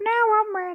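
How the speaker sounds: put-on very high, elderly woman's voice. Joking about waiting for the perfect time for a baby, in an old lady voice. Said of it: "I like your old lady voice".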